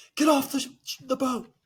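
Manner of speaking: high yell, breathless on the run. Yelling at a crewmate while running toward the gangplank: yelling while running. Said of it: "I yell as I'm running".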